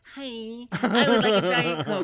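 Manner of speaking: loud, high, drawn-out belted delivery. Imitating T S Madison at a drive-in: T S Madison trying her voice. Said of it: "Let me try my voice".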